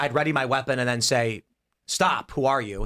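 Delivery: normal talking voice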